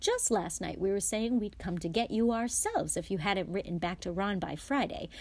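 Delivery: ordinary delivery, nothing marked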